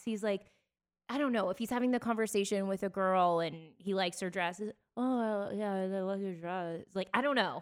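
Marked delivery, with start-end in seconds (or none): 5.0-6.8 slow, bad mumble, lips barely moving. Speaker doing a bad impression of how a man talks: mumbling, mouth barely open. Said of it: "he doesn't really open his mouth, so he talks like this. That's a bad impersonation, but that's what it sounds like".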